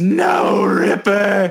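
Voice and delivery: anguished shriek, very high, rough and raw. Game master voicing a character watching his wolf go down, anguished scream. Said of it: "go down and screams".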